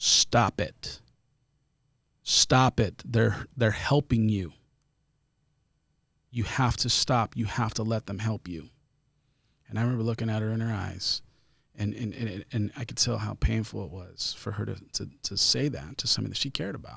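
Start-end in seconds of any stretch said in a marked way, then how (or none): 0.0-8.7 mock stern, insistent, loud delivery. Retelling a crying teacher grabbing a hurt child's face: imitating Miss Zanganella sternly. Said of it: "and she grabs my face and very sternly".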